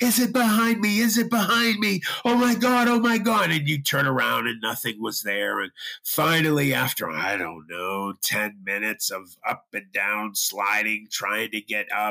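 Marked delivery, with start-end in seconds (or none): 0.0-3.5 very high, shrill, repeated screaming. Retelling what each friend screamed while sliding back down: imitating someone screaming. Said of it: "each one of us would start screaming".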